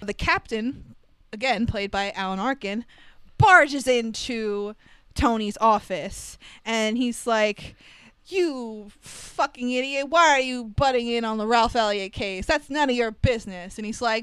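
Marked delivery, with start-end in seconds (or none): 8.3-13.8 put-on angry, ranting voice. Retelling a movie scene where the captain barges in: imitating an angry police captain. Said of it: "the typical angry captain shtick".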